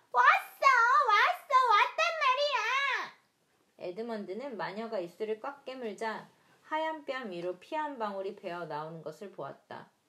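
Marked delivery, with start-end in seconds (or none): 0.1-3.1 very high, very loud, drawn-out squealing screech. A baby squirrel bangs the table with a small spoon, shrieking. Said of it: "빽빽 소리를 질러댔다".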